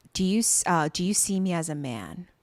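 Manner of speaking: mock earnest, dead serious, halting, very slow. Retelling a drama scene where he wakes her up, imitating a dead serious question. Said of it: "And he's being dead serious".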